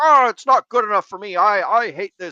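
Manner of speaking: mock, very high, loud wailing emotional whine. Speaker mimics a man butting in when people try to educate him, mocking an emotional whine. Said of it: "he would butt in with like an emotional".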